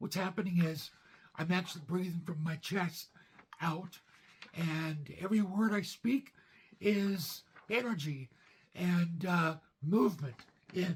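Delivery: strained, breathy, effortful voice. Describing a cancer diagnosis in an old video: strained, breathy voice. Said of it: "my voice is so strained".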